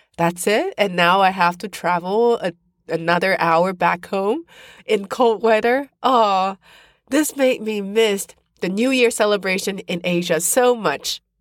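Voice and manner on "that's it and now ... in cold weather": normal talking voice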